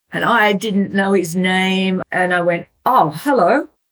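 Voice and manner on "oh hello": really shocked, startled, caught-off-guard voice. Retelling a man greeting her by name at breakfast, she acts out her shocked reply. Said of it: "really shocked".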